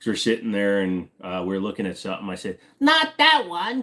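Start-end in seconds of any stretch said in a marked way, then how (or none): 2.8-3.8 very high, loud cartoon voice. Retelling doing a voice in a store for a friend: SpongeBob voice. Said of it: "the first time that I did that voice".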